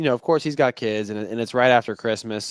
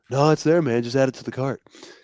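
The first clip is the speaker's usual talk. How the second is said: casual, relaxed, friendly buddy-like voice; 4 semitones higher than usual. Retelling a phone call from Sean, imitating Sean's voice. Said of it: "almost Duck with your impression".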